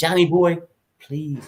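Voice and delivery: hushed whisper. Parent in a shopping store pleading with their kid: whispering. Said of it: "you whisper".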